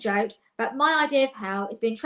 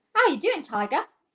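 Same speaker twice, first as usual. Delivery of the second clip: bad, rubbish put-on Australian accent, chatty tone; 5 semitones higher than usual. Quoting a chatty Australian's greeting, [name]'s rubbish Australian accent. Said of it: "that's a really rubbish Australian accent".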